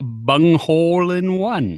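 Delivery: silly, goofy, made-up put-on voice. Showing another speaker how much he has grown: goofy voice. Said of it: "Not without doing a goofy voice".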